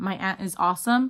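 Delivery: ordinary delivery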